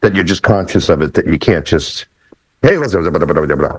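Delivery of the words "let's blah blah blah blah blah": rattling off fast like an auctioneer. Explaining speech pacing, showing how not to talk, in fast auctioneer patter. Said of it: "like an auctioneer".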